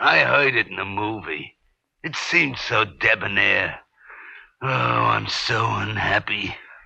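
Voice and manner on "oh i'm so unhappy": slow groaning like a sick cow. Character just introduced to a couple, groaning like a sick cow. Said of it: "groaning like a sick cow".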